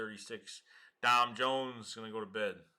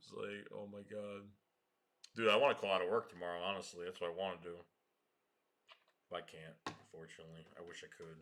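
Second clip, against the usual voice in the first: plain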